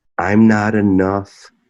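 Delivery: normal talking voice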